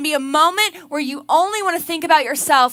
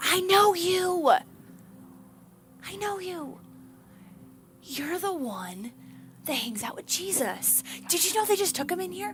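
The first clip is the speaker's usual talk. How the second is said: soft, pointed, accusing whisper; 3 semitones higher, 10 dB quieter than usual. Retelling the story, the speaker voices a woman confronting Peter: retelling an accusatory whisper. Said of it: "Kind of accusatory".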